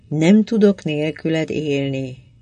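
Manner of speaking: plain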